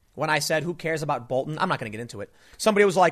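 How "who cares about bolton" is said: plain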